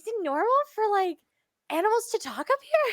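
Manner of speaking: trying to whisper quietly. Voicing a character who leans over to a shoulder: attempted whisper. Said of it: "trying to be quiet".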